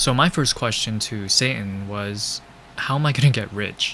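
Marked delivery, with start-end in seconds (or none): none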